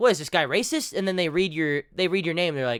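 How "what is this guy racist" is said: normal talking voice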